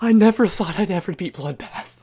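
shaky, trembling, overwhelmed voice. Streamer has just beaten the Bloodbath level after many tries, shaking, overwhelmed. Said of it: "I'm shaking, dude".

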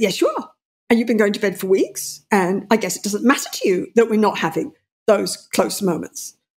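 pointed, threatening, accusing tone with swooping pitch. Speaker reenacts confronting him about going to bed, retelling an attacking tone. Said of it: "I'm on the attack".

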